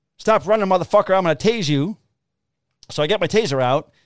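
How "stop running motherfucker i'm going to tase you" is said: stern yell, high and urgent. Speaker recounts chasing a man who ran from them, retelling a yell. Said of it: "And I'm yelling".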